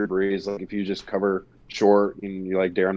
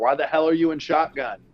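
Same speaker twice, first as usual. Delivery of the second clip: loud, pitched-up hollering yell; 7 semitones higher than usual. Retelling watching the play on tv, retelling yelling at the tv. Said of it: "I was sitting there yelling at the TV".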